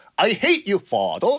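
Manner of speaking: laid-on British pronunciation. Retelling the prince shouting at his father: put-on British accent. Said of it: "영국식 발음이니까".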